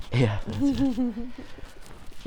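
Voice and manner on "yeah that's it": high, slow, put-on British accent. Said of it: "let's do it in British accents".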